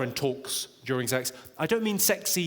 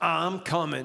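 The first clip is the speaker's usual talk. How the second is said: mock sultry 1970s New York voice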